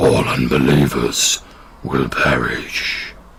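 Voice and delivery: very low, deep monstrous creature voice. A game narrator voicing a trident-wielding creature in a cavern, in a deep creature voice. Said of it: "and in this deep voice says".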